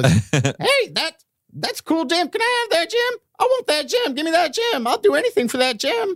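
squeaky little gnome voice, very high and swooping. The spellbound little gate guard begs for the item, tiny gnome guard voice. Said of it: "The gate is manned by two guards, and they are both half-orc gnomes. And one of them is really big. Gnomes? And one of them is really small. / The little guard in front of you rolled a 6, so he's also".

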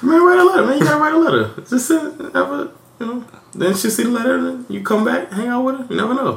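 very high-pitched, rapid, rattled-off chatter. Retelling how Sheldon urged someone to write a letter, imitating Sheldon talking fast. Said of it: "Sheldon talking fast like that".

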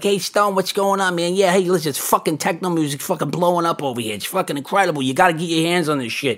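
Brooklyn character voice. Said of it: "It's like real Brooklyn character".

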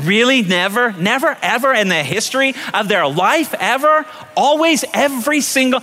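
a touch of teasing sarcasm. Questioning someone's claims of never and always, a little sarcastic. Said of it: "that's a little sarcastic".

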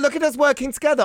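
delighted, gleeful, high, fast and loud.

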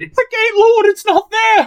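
shrill, very high-pitched scream. A character reports to his lord about the gate: screaming. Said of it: "Stop screaming at me".

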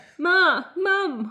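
high, loud, pained screaming cry. Reading a story aloud, the hurt narrator calls out for Mum; screaming. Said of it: "I screamed".

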